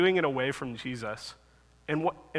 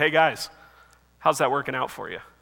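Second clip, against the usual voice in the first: mock, put-on sarcastic tone; 2 semitones lower, 3 dB louder than usual. Retelling a question asked of fishermen back at old work: imitating a sarcastic question. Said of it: "totally sarcastic".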